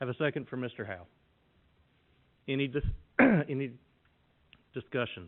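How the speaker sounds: choked-up voice catching with emotion. Calling for a second and discussion on a contract motion, choked up. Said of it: "I'm getting choked up".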